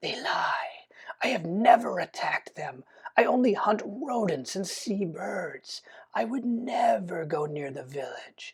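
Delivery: soft creature voice with clicking mandible sounds. A narrator voices a spider accused of stealing the village's sheep, in a spider creature voice. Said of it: "The spider's mandibles click".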